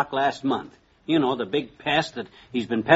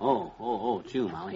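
plain

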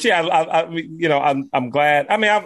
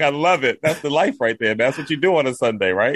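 ordinary talk, nothing marked

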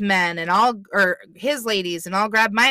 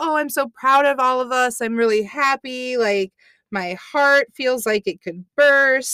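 mock over-the-top gushing pride, pitched higher; 4 semitones higher than usual. Retelling a contestant praising the team, imitating over-the-top gushing. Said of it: "she gets very over the top with it".

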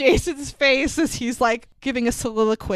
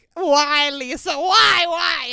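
high, very slow meltdown, each "why" stretched; 5 semitones higher than usual. Recalling a scene from The Room where he fights with Lisa: imitating The Room fight scene. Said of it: "that scene in The Room where he has a fight with Lisa".

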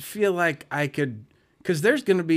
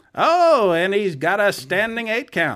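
vintage 1920s broadcaster-style announcer voice; 4 semitones higher, 4 dB louder than usual. Speaker commentates on the scene: 1920s announcer voice. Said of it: "I would have to go with that 1920s announcer".

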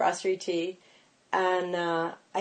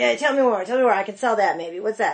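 New York manner of speaking; 2 semitones higher than usual. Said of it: "she's real New York".

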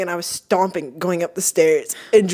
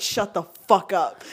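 play-acted heated, exasperated, angry tone; 2 semitones lower, 6 dB quieter than usual. Retelling words said while walking up the stairs: imitating own angry words. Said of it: "I was just so ang-".

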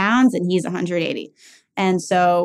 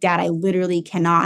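ordinary talk

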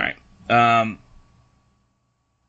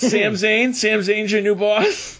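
high, mocking taunt. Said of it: "credit to the New Day for being like".

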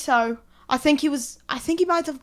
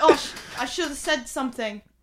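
normal talking voice

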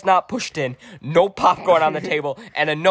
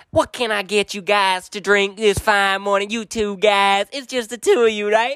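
put-on Southern twang; 4 semitones higher than usual. Retelling a story, quoting a woman who spoke with a Southern twang. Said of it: "she got a Southern twang".

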